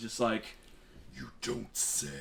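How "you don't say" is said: low, deep, whispered dragon-like voice. Telling the table how a transforming character answers: deeper, more draconic voice. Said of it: "in a deeper, more like draconic voice".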